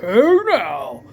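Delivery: radio DJ announcer delivery. Describing the voice many people use on a mic, dj voice. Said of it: "that D J voice like".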